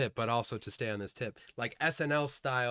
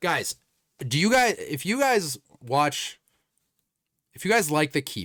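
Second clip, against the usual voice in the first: full-volume, loud screaming yell; 4 semitones higher, 9 dB louder than usual. Pitching a sketch idea to Keep-Up podcast listeners, the speaker is screaming. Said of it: "Sorry, I'm screaming".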